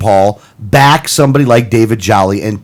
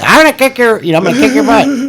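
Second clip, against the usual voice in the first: squeaked out very high in pitch; 13 semitones higher than usual. Retell an episode where he would curse and yell at people, in a Mickey Mouse voice. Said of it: "In like the Mickey Mouse voice".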